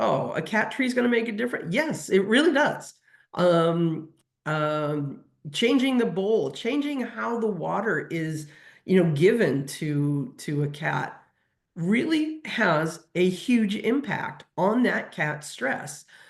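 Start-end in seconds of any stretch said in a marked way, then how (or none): 0.0-1.7 high, fast dismissive scoffing. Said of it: "I've heard people scoff before".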